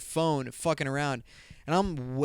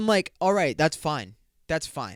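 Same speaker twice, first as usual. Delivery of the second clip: normal talking voice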